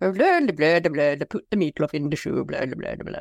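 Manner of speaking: nonsense babble in a cartoon puppet-chef style. Co-host tells another she sounds like the Muppets chefs, Swedish Chef gibberish. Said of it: "you sound like the chefs from the Muppets".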